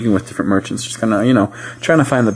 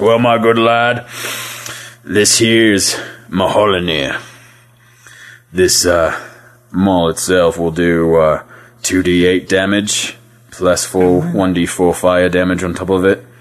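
rough dwarf character voice; 2 semitones lower than usual. Voicing a dwarf selling a maul to a player: gruff dwarf voice. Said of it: "gets real gruff in your face and says".

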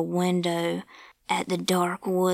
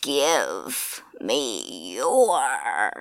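very low, swooping, strange, eerie unseen-sounding voice; 7 semitones lower than usual. Reading a story, the unseen voice outside the old man's cabin, strange voice from the dark. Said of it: "Then he heard a strange voice from out in the dark somewhere".

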